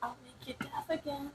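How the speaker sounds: very quiet, hushed whisper, barely voiced. In a roleplay, whispering into another character's ear. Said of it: "I just whisper into his ear".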